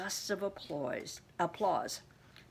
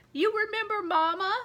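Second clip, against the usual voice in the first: very high, unbroken voice, pitched way up and raised; 12 semitones higher, 6 dB louder than usual. Mister Pennypacker speaks to Grandma about his mama, in a high unbroken voice. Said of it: "His voice was high, like it had never changed".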